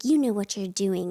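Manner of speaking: put-on stern British accent. Retelling an older woman knocking on the speaker's door: imitating a stern British accent. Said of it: "she had like a very stern British accent".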